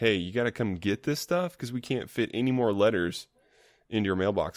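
plain

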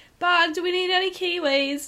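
very high, botched, bad Australian accent. Retelling a shout down a Tesco aisle: bad Australian accent. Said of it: "talking in an Australian accent".

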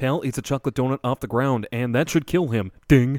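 snarky, nitpicking narrator voice. A dog owner mocking his own reaction to something he noticed, in a CinemaSins narrator voice. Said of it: "How much have you practiced the CinemaSins voice?".

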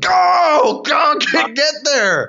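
very high, very slow, drawn-out shout. Recalling yelling at a partner after a questionable dig: imitating own past yelling. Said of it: "I only yelled like that".

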